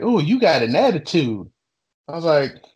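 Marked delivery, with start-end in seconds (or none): 0.0-1.5 pissed-off, angry retort. Retelling a customer's complaint: imitating an angry customer. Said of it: "she gets all pissed and is like".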